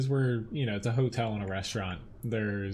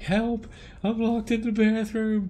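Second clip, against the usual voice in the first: put-on shrill, frantic, panicked little-kid scream, very high; 12 semitones higher, 6 dB louder than usual. Retelling a story of a kid locked in a restaurant bathroom, imitating a kid screaming. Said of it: "he's like screaming like".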